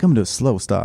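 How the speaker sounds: laid-back, cool, jazzy voice. Voicing a purple traffic light telling drivers to slow down: laid-back jazz voice. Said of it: "It's like jazz".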